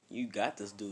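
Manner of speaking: ordinary talk, nothing marked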